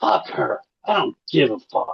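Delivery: high, slow, snapping, dismissive angry outburst. Retelling what Jimmy said when he snapped: imitating someone snapping angrily. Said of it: "he just snaps and loses".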